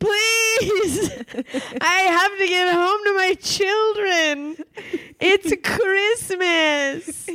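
acted-out, very high, tearful, crying begging. Retelling a woman in a cell begging to get home, imitating someone crying. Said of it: "just crying and being like".

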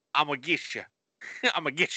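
Southern American accent, rattled off quickly. Contrasting how a southern person says a phrase, in a southern accent. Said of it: "But a Southern person says".

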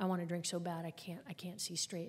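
ordinary talk, nothing marked

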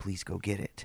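whisper. Retelling what a wife said after her shower: imitating a whisper. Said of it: "she's whispering to me".

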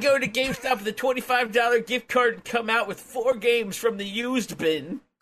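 put-on old man voice. Answering teasing about sounding like an old man, in an old man voice. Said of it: "Why is this an old gentleman shopping?".

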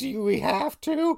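high, slow, drawn-out whiny reluctant mom voice. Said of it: "so she's like".

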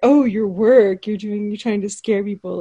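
mock-teasing, mocking tone. Recounting a scene where a woman answers a writer, imitating her mocking tone. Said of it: "kind of mocks her".

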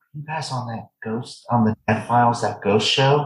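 confidential, leaning-in voiced stage whisper. Retelling how a store checker leaned in and asked: imitating a half-whisper. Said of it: "and she whispers".

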